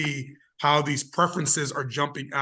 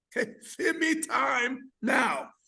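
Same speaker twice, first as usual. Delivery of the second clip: bad put-on Jamaican accent, much higher; 11 semitones higher than usual. Speaker demonstrating a phrase to the other speaker, bad put-on Jamaican accent. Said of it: "I'm gonna give you a little Jamaican accent here".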